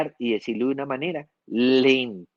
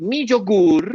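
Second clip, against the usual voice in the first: slow, loud, pitched-up, drawn-out emphatic "mi yogur"; 6 semitones higher, 3 dB louder than usual. Showing which element stands out most: slow and loud on 'mi yogur'. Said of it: "Lo dije despacio y en un volumen alto".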